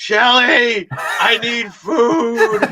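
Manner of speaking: put-on very drawn-out, loud drunken scream. Retelling what a friend yelled while drunk: imitating a drunk man screaming. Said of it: "he started just screaming like".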